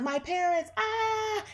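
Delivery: very high-pitched panicked cry.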